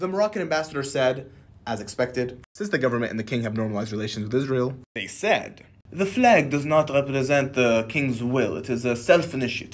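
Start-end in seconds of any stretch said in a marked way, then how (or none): 5.9-9.8 slow, fake French accent throughout. Quoting the Moroccan ambassador's statement: put-on French accent. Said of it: "I just put in a French accent in there just in case".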